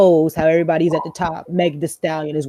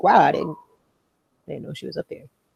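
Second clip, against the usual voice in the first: ordinary delivery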